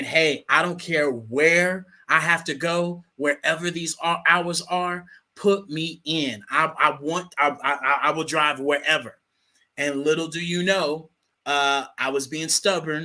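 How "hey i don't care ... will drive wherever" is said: plain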